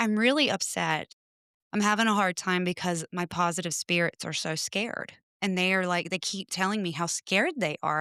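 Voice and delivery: ordinary talk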